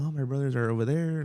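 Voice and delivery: ordinary talk, nothing marked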